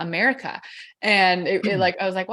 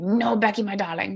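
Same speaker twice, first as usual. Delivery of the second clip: put-on heavy German accent, laid on thick. Retelling grandpa's reply on a phone call from the airport, thick german accent. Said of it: "In his like thick German accent".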